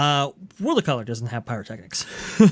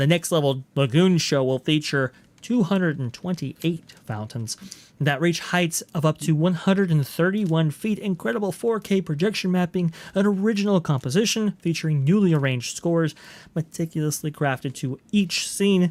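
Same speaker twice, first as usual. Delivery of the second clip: steady, straight read-aloud delivery; 3 semitones higher than usual. Reading an announcement aloud to get back to it: reading very fast. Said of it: "read this very fast".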